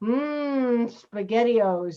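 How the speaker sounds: put-on old-fashioned commercial-style delivery, drawn-out "mm". Mocking an old style of commercial: mock old-style commercial "mm". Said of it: "it's like someone going".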